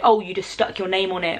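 normal talking voice

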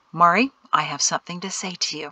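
ordinary talk

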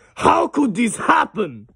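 high-pitched character voice pushed from the chest. Repeating a game line after it plays: Heavy voice. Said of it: "That one kinda hurts my chest".

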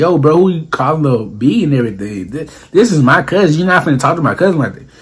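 normal talking voice

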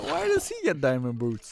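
New Jersey accent at a high pitch.

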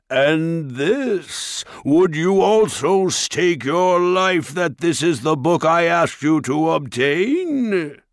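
loud, ringing, echoing, sneering, contemptuous ogre voice. Reading a story, the ogre turns back to the dwarves, sneering, ringing ogre voice. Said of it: "The ogre's great horned head loomed over the rest of the creatures as he turned back to the dwarves with a sneer. ... [name]'s ringing tones echoed through the quarry".

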